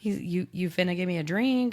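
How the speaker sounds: ordinary delivery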